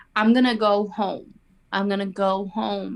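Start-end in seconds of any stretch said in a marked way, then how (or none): none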